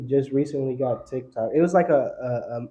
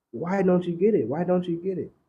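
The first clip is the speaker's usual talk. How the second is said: crying, high-pitched, tearful pleading voice; 6 semitones higher than usual. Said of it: "he's trying to explain to people".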